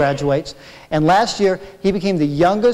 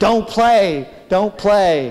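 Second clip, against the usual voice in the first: put-on urgent scolding scream at half strength; 3 semitones higher than usual. Reading out a story of mom chasing behind: imitating mom screaming. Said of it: "behind me screaming".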